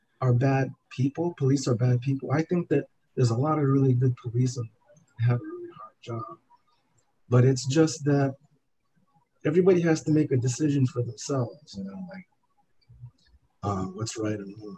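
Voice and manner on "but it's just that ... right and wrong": emotional, choked-up speech with voice catching. Sharing a personal view, choking up as you say it. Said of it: "I feel like I'm choking up as I'm saying that".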